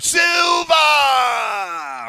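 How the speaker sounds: long, high, swooping, stretched-out holler. Showing how to say the keyword: Yukon Cornelius voice. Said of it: "Say it like Yukon Cornelius".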